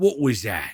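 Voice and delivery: hissed, hissing goblin voice. Narrator voicing one of the goblins, in a hissing goblin voice. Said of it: "one hisses".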